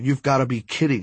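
ordinary delivery, nothing marked

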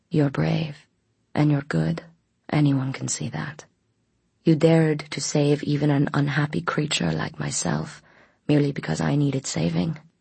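plain reading voice

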